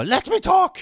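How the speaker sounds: shrill, very high falsetto scream. Speaker describing a footballer yelling at a referee: imitating Kevin De Bruyne yelling. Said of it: "När Kevin De Bruyne skriker så".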